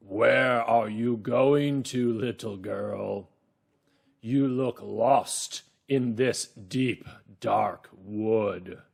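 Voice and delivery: gruff, rough, deep, loud wolf voice. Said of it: "he's got a real rough voice because it's a wolf".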